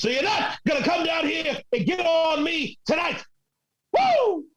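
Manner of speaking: flamboyant, slow, high, swooping wrestling promo voice. Asked for their best Ric Flair impression, the speaker does a Ric Flair impression. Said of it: "your best Ric Flair impression?".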